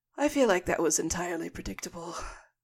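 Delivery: incredulous, hushed half-whisper under the breath. Narrating the scene, the storyteller voices a character half-whispering to himself. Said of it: "kind of whispers to himself".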